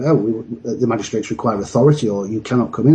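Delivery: ordinary delivery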